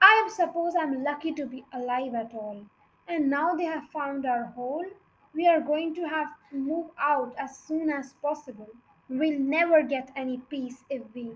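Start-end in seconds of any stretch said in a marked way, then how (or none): none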